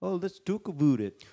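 very high cliché Canadian accent. Explaining how people mimic Canadians, in a stereotypical Canadian accent. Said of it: "the stereotypical Canadian accent".

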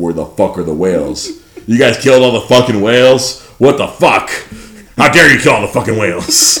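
furious, angry cursing rant full of fury. Acting out aliens scolding Earth about the whales: angry J. K. Simmons voice. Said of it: "Now my angry voice is just Jonah J-, just J K Simmons".

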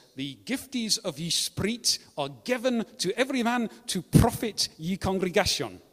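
Scottish-French sounding accent. Reading aloud from the very old English Tyndale translation, kind of Scottish-French accent. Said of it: "Comes out in a kind of Scottish-French accent for some reason".

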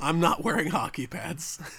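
deep, low, gravelly, grinding put-on voice. Asked to do the voice again, deliver the line in Batman voice. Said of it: "Do your Batman voice again".

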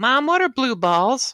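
put-on very high, loud little girl voice. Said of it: "She got off the stage and went".

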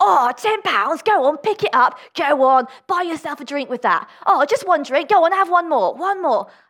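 put-on Cockney accent. Voicing the Devil in an example, in a Cockney accent. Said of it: "I always do a Cockney accent for the devil".

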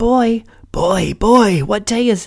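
mock, very high, drawn-out yell. Retelling a musical scene where Scrooge yells out the window: imitating Scrooge yelling. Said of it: "He yells out the window".

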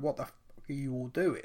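ordinary talk

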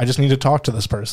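ordinary talk

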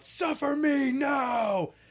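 mock very high, shrill, drawn-out outcry. Retelling what a game character yelled after a grab: imitating a yell. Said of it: "he yelled out".

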